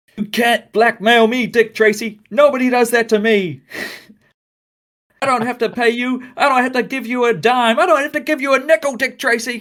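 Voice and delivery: mock shrill, high-pitched, very high screaming. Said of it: "And he's screaming".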